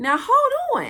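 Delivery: high, slow, incredulous tone. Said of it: "And I'm like".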